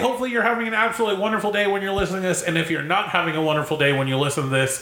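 said very fast, rushed and rattled off. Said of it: "You said that real fast".

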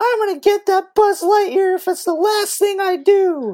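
play-acted, shrill, very high, desperate scream. Retelling an older brother's christmas threat over a toy: imitating brother screaming. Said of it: "screaming it at me".

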